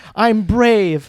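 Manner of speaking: put-on yelling. Teasing another speaker about their dancing, imitating someone yelling. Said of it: "the whole time you're yelling".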